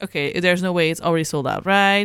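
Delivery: ordinary talk, nothing marked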